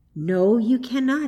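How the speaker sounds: soft, gentle, kind tone. Reading a story, a woman answers a woeful cry, gently. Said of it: "said the woman gently".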